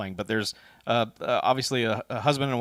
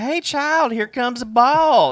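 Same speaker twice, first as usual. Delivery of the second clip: very high, loud, hammed-up put-on country drawl; 13 semitones higher, 9 dB louder than usual. Describing a movie scene, quoting a character at a baseball game, countrying it up. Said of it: "countrying it up".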